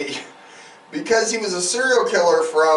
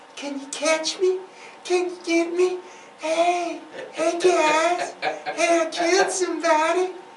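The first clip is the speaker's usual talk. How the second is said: put-on very high-pitched, remorseful woman's voice; 11 semitones higher, 4 dB quieter than usual. Act out a killer calling the police about his crimes, in a put-on high-pitched remorseful woman's voice. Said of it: "in a high-pitched woman's voice, being remorseful".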